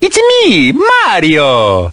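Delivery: high, swooping Italian accent. Describing a homemade costume to a friend, then doing a Mario impression. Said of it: "try out my Mario impression".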